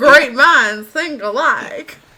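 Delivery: put-on voice, belted high and very loud. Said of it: "can you change your voice to mine?".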